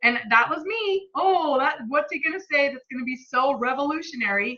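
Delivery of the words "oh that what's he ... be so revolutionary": snide, dismissive, scoffing, sarcastic brat tone. Retelling own past reaction to the book club: imitating own sarcastic tone. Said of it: "Sarcastic little stubborn brat over here".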